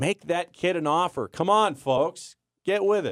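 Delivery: high, fired-up, all-out hollering. Praising an overlooked running back to the other speaker: screaming. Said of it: "And screaming".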